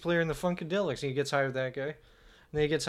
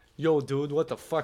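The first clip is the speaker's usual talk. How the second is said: casual, relaxed, put-on Russian accent. Offering to show a Russian accent: Russian accent. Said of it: "Wanna hear Russian?".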